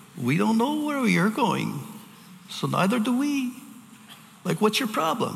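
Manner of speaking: put-on very high voice with Yiddish-inflected accent.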